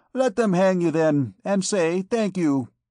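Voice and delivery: brushing-off tone. A vagabond woman answers a man who has no money, retorting. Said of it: "retorted the vagabond wench".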